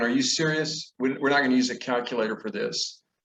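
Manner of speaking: plain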